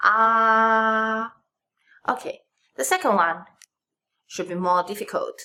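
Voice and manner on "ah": ah held high and flat on first tone. Teaching the first tone with the vowel ah: high flat first tone on ah. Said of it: "this is the first tone, high and flat".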